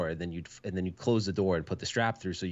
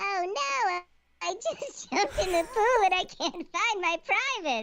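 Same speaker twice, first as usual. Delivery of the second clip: very high, squeaky, silly put-on voice. Reading this one aloud as Stringer asked: high-pitched voice. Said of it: "in the high pitched voice".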